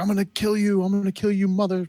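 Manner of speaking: very high scream. Recapping a film's train chase, imitating De Silva's furious screaming. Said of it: "De Silva's screaming like".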